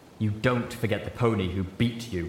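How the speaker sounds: ordinary delivery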